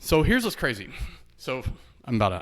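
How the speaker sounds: huffing, winded, short of breath. Speaker starts a story and notices being short of breath, out of breath. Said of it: "I don't know why I'm about out of breath".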